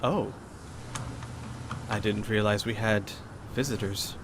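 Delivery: refined, soft, elegant delivery. Narrating a scene, the speaker voices a man turning toward newcomers: elegant tone. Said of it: "he actually says in a rather elegant tone".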